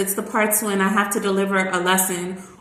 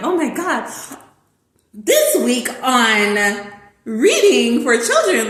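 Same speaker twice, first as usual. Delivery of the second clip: swooping, drawn-out game show announcer voice; 4 semitones higher, 4 dB louder than usual. Describing reading to a kid like a contestant show, in an announcer's voice. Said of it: "say everything in an announcer's voice".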